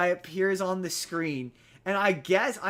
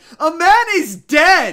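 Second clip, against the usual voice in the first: put-on scream, higher and louder; 9 semitones higher, 13 dB louder than usual. Retelling watching a movie, screaming at the television: imitating own screaming. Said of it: "screaming at the television being like".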